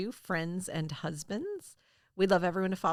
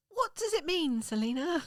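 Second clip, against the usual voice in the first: uneven fake British accent, higher; 10 semitones higher than usual. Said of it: "we have a really uneven British accent".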